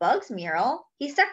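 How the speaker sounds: ordinary delivery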